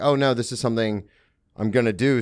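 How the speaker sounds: normal talking voice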